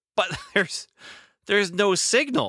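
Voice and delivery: put-on, very high, startled and appalled. Describing an actor's line reading about a television set, mock surprised and appalled. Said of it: "surprised and appalled".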